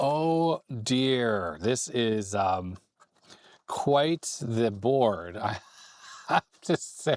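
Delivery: slow talk, words breaking up with laughs. Reacting to a board full of socketed chips, laughing while talking. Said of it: "Sorry for laughing".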